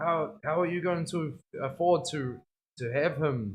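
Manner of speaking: put-on thick, heavy Dutch accent, slow. Recalling telling Opa about a new dog, imitating Opa's thick Dutch accent. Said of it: "His thick Dutch accent".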